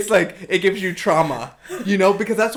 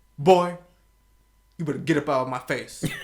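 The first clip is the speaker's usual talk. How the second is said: put-on stern voice, lower pitch; 6 semitones lower, 3 dB quieter than usual. Retelling how dad warned the kids, imitating dad's voice. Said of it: "I jokingly do this voice".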